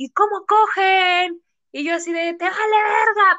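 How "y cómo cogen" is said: put-on high street yell with cogen drawn out. Retelling what people shouted at her and a guy she dated, imitating a yell. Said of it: "en la calle nos gritaban así de".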